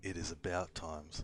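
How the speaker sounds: hoarse, husky voice. Narrating to Ray as a door opens, an unseen speaker talks in a husky voice. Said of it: "you hear a husky voice say".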